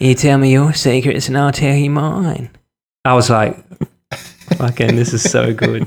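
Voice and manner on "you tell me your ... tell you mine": strung-out, drugged-sounding voice. Act out an alien leaning in to speak, in Ben Mendelsohn's recreational heroin user voice. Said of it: "recreational heroin user voice just goes".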